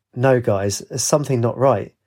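ordinary delivery, nothing marked

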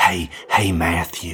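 imitated put-on young little boy voice. Retelling how his buddy's five-year-old son greets him, doing Carter's voice. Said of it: "do the voice".

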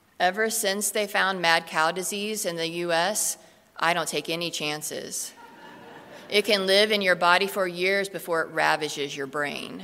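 monotone, flat voice. Retelling a sketch where Debbie answers her friend's steak order, in Debbie's monotone voice. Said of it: "in her famous monotone voice".

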